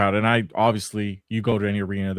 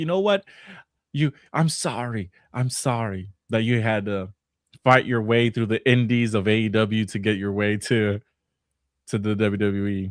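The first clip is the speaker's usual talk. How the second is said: put-on earnest, sincere, slow, heartfelt tone. Retelling Liv Morgan's segment explanation: imitating Liv Morgan's heartfelt apology. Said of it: "she's over here giving a heartfelt explanation, being like".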